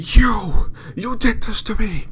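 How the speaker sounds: ghostly woman voice, haunted and horrified. Voicing a ghostly woman lunging at the players: ghostly woman, haunted and horrified. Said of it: "haunted and horrified, as she looks upon all of you and says".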